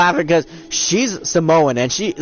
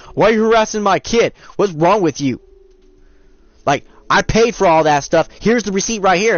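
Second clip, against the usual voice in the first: put-on irate, indignant complaining voice; 3 semitones higher than usual. Retelling how a customer's mom came in: imitating a mother yelling. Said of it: "Mom came in yelling at me".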